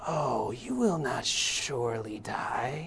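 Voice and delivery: very slow, hushed snake hiss with stretched s's. Reading the serpent's line to his young boys, in a snake voice with drawn-out S's. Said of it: "draw out your S's".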